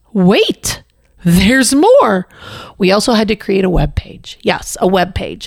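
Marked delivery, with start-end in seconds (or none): 0.1-2.2 put-on TV pitchman voice with swooping announcer pitch. Listing required interviews and letters, then switching to an infomercial announcer voice. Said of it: "in my best infomercial voice".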